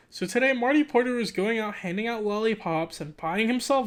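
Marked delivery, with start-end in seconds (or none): none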